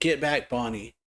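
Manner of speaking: ordinary talk, nothing marked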